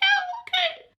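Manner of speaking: very high, nervous, squeaky falsetto. Describing a scene they watched, imitating Roy's nervous squeak. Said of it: "Squeaks out like".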